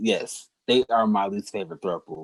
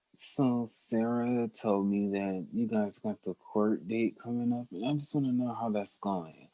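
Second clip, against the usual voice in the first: slow, soft, thick mumble, as with mouth full; 8 dB quieter than usual. Imitating how Malcolm talks without opening his mouth: Malcolm mumbling impression. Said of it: "talking like you got a mouthful of peanut butter".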